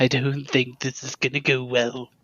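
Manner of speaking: hushed, whispered voice. Playing a character who takes out Speedy and whispers to it: whispering. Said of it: "I take out Speedy and I whisper".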